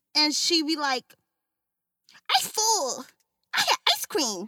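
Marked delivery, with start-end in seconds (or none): 2.4-4.5 put-on high, sing-song, babyish baby-talk voice. Describing how a woman talks, the speaker imitates her: imitating her baby talk. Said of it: "she talking this baby talk".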